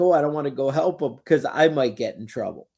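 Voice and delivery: normal talking voice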